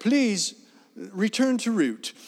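high, put-on British lady navigation-device voice. Describing a phone navigation app, imitating its British woman's voice. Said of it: "I have a British lady's voice on here".

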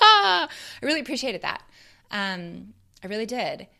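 choked up. Talking about a film scene that moved them: choked up. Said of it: "really, really choked up".

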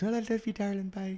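put-on fond, lingering, high doting mum voice, Irish accent. Imitating a friend's mum who is hard to get off the phone: imitating Eileen's Irish mum goodbye. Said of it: "Poor lovely Eileen was".

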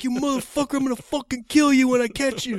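shrill, full-volume, menacing high scream. Telling a story, quoting a man who was screaming at him; retelling a man screaming. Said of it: "And he's screaming".

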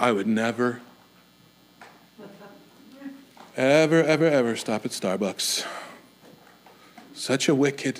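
mock preachy sermonizing, low, hushed, sanctimonious. Imitating the kind of person who gives sermons on certain topics, mock-sanctimonious. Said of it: "a sanctimonious sermon from them".

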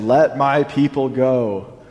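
very slow, every word drawn out. Retelling Moses confronting Pharaoh, joking: Charlton Heston impression. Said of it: "put on his best Charlton Heston impression".

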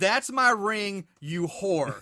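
put-on demonic shouting voice. Recapping a scene where Josephine confronts Nicole, imitate Josephine's demonic shout. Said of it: "shouts at her in a demonic voice".

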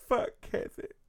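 words spoken through weeping, tearful crying voice. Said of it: "I'm crying".

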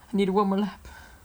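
play-acted voice on the verge of crying. Retelling what a driver said on the radio after the race: imitating a near-tearful driver. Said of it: "He was on the verge of crying".

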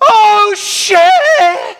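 sudden scream, very high and very loud. Retelling a friend waking up as the car crashes: imitating someone screaming. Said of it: "Joe opens his eyes and screams".

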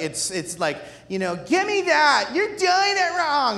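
put-on high, whiny sing-song child voice, drawn-out "that". Acting out people blaming each other in a room, imitating whiny talk. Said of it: "whiny talk zone".

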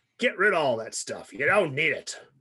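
rough put-on voice. Quoting what Nolan Bushnell says to complicated game pitches: imitating Nolan Bushnell. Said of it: "I don't have a very good Nolan Bushnell accent".

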